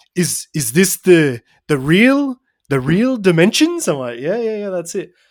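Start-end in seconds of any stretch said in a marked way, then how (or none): 0.1-3.8 worst fake French accent, terribly done. Retelling what a man said while looking at a shirt, in the worst French accent. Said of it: "I'm going to do the worst French accent".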